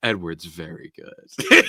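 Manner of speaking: low, sultry, mock suggestive tone. Mimicking how people praise Edward: mock-sultry, suggestive tone. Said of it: "in a tone that's, like, extremely sexual".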